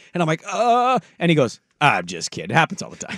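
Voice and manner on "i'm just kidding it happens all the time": sounds like a broadcaster. Retelling a phone call where the caller corrects his name: imitating Ian Eagle's voice. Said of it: "In the voice".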